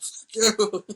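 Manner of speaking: shrill, very high, furious enraged yell. Retelling a movie scene where a character yells at Larkin, retelling a furious yell. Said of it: "And he yells at Larkin".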